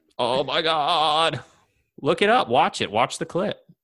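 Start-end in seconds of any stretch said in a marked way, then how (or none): 0.2-1.4 bad put-on American accent, "God" drawn out. Imitating an actor's scene, doing Alan Rickman's bad American accent. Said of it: "a really good impression of it".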